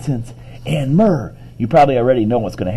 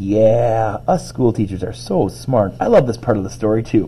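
ordinary delivery, nothing marked

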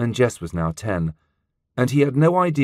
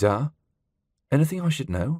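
tentative, hesitant, unsure, not quite daring; 3 semitones higher than usual. Narrator reading a son's question to his tense father: hesitant question. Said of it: "So he asked hesitantly".

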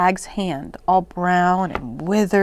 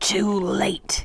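soft hissing witch voice; 5 dB quieter than usual. The witch speaks as Mommy appears in the doorway with a sword; hissed. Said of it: "hissed the witch".

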